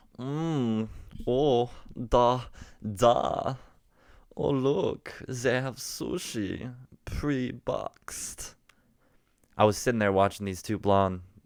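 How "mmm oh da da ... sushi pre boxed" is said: put-on Dutch-Swedish accent. Voicing imagined foreign exchange students in a school cafeteria; put-on Dutch Swedish accent. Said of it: "let me get this this kind of Dutch Swedish accent going".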